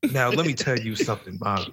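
low-pitched, dead serious put-on voice. Imagining a public figure on a dinner date: low serious Stephen A. Smith voice. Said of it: "the low serious voice".

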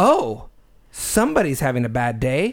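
play-acted sassy, cheeky, lippy tone. Retelling what a cashier said at the register: imitating a sassy cashier. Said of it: "And she was being sassy".

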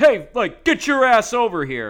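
very loud, high, far-carrying holler. Retelling how a man behind them at a game yelled at a vendor: imitating someone yelling. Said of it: "just keeps yelling at me".

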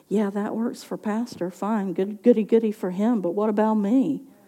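quiet, hushed half-whisper. Acting out the enemy's taunt after it starts to half-whisper: imitating the enemy half-whispering. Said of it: "he starts to whisper".

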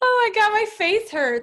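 high-pitched, laughter-choked words. Reacting to a joke another speaker told: laughing while talking. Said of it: "I'm laughing".

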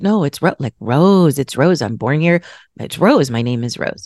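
ordinary talk

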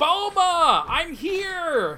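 very high, big-voiced, stretched-out hollering. Arriving at a big house, he calls out for the girl who lives there, shouting in a big voice. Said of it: "You don't have to shout in such a big voice".

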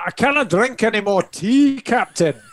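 put-on Scottish accent. Answering a request to say something in a scottish accent. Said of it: "Can you say that in a Scottish accent?".

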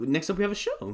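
voice cracking. Introducing the next show to talk about: voice cracking. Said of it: "my voice cracked".

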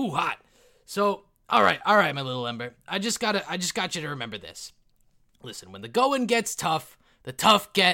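booming, high bellow. Narrating a dream, the game master speaks as the smith god to a character: Hephaestus voice. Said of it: "he's like".

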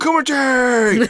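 high, loud crowd screaming and yelling.

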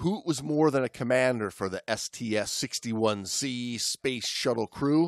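ordinary delivery, nothing marked

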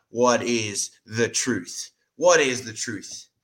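mocking, disbelieving, sarcastic tone. Retelling Pilate questioning Jesus: imitating Pilate sarcastically. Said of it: "sarcastically looking at Christ".

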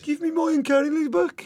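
proper broad, thick Brummie accent, very high pitch. Answering a request to do it in a proper, thick Brummie accent. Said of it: "Do it in a proper, thick Brummie".

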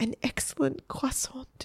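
soft, shaky, trembling whisper. A boy held by the waitresses answers their question, trembling whisper. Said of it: "whispered the trembling Egbert".

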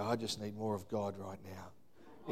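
muttered under the breath. Recalling a moment with their wife, saying this under their breath. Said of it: "under my breath".

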